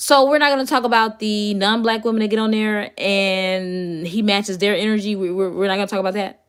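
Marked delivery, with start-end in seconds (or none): none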